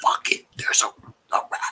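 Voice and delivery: quiet, low mutter under the breath. Warning a nearby companion in character about a rat, muttered under the breath. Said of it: "under my breath".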